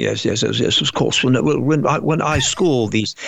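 put-on heavy, pompous British accent laid on thick, very slow. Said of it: "a really pompous British guy with a really heavy, thick accent".

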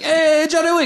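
loud, very high-pitched put-on Italian mobster accent. Recapping a john wick movie, voicing a mob member calling in a favor, italian accent. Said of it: "Do you do a good Italian accent?".

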